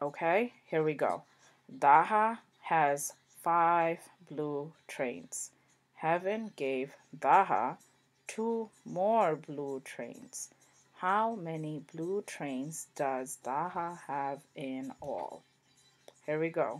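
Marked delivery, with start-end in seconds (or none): 1.8-15.4 reading word by word, very slow and deliberate. Reading a number-bond word problem aloud for the class: very slow reading. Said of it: "very slow".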